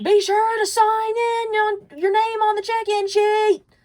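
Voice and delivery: very high, very loud, shrill top-of-the-lungs shriek. Retelling how a woman by the door at a funeral startled everyone, imitating her screaming. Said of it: "like screaming at the top of her lungs".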